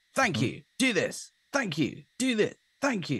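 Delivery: bright, upbeat, direct. Imitating auditors in other sessions: imitating an upbeat, direct auditor. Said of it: "much more uptone and much more direct".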